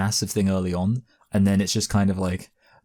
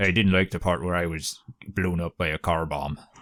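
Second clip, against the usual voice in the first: put-on Northern Irish accent; 3 semitones lower than usual. Practising an accent with a partner, one speaks in a Northern Irish accent. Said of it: "a Northern Ireland impression".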